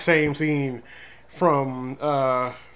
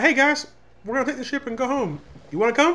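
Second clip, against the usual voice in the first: high, laid-back, easy voice. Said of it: "Nancy boy type voice".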